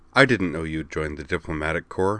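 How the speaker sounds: ordinary delivery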